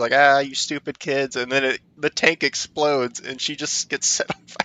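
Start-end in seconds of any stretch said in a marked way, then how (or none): 0.1-1.4 loud, screaming outburst. Retelling a game scene where a character escapes her tank: imitating a character screaming. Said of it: "screaming at you".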